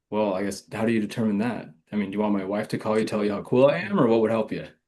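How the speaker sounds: mock-playful, joking tone. Retelling own reply when asked how to close the deal: retelling own playful reply. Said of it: "a playful tone".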